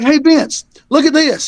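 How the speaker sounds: put-on country accent. Retelling someone showing him a pitch, imitating a real country accent. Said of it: "he talks with a real country accent".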